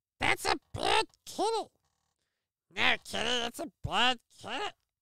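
put-on silly, scolding baby voice.

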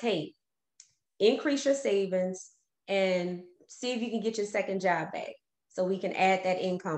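normal talking voice

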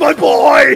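high, very loud, tearful sobbing scream. A player voicing a father whose son was just killed, tearful screaming. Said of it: "tears are just screaming".

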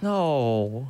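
sad, sorrowful, downcast. Answering a friend who says they'll take the world record, sad. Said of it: "You sound so sad".

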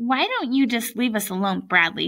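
ordinary delivery, nothing marked

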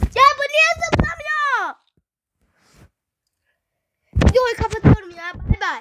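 furious frustration. Player failing at a tablet game says he'll quit, angry. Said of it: "Sinirimden tableti kıracağım ya".

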